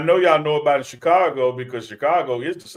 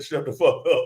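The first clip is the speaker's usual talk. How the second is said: ordinary delivery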